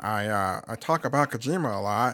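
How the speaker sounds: deep cartoon-character voice. Answering as the absent co-host, imitating him like Squidward. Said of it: "I like how you make him sound like Squidward".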